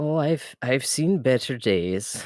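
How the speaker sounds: attempted Irish accent. Voicing a character asked if he is okay: attempted irish accent. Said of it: "I can't do Irish!".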